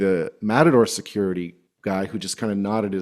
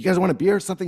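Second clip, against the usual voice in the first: put-on eager hospitable voice, super hyped, higher; 9 semitones higher than usual. Retelling how Axel offered them beers: imitating Axel, super hyped. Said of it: "super hyped and, like, like, in, like, real hospitable mode".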